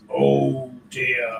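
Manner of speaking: put-on deep, plummy, posh, old-fashioned English voice. Retelling a voice everyone heard at Fulford Manor; retelling a really deep voice. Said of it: "we heard this really deep voice went".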